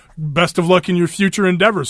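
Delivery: plain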